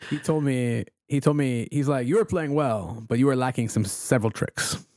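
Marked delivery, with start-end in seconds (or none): 2.1-4.8 English spoken with a put-on French accent. Retelling what the demonstrator told the speaker: imitating a french accent. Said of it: "he's in, like, a French accent".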